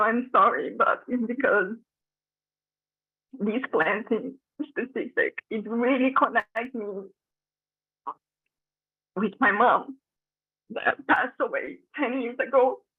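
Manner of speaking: emotional, choked up, on the verge of crying. Speaker explains that these plants connect them with their late mother, emotional, near tears. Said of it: "I'm really emotional".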